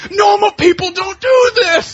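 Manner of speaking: put-on screaming. Retelling a scene, the speaker acts out a woman retelling a scream. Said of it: "she starts screaming".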